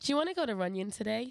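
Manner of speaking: put-on American woman's accent. Saying a line as an american woman would: put-on american accent. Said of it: "An American woman say".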